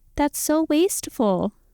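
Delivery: put-on high, sweet little-girl voice. Speaker retelling what their little niece said while babysitting: sweet little girl voice. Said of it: "in her little sweet, oh my God, that was little like voice".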